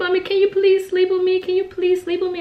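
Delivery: mock crying little girl voice, high, tearful, pleading. Retelling a daughter's plea to sleep with her: imitating a crying child.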